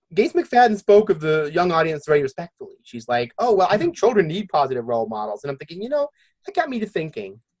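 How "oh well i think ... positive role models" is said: usual speaking voice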